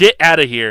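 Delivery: loud yell in a character voice. Playing a character who yells at someone to leave: yelling in character. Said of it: "Michael is just gonna yell".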